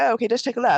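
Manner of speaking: bad British accent. Imitating the british lady from the story: bad british accent. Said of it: "my really bad British accent".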